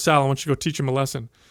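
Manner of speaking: put-on mutter under the breath. Retelling what the coach said to him, imitating a muttered aside. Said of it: "he says under his breath".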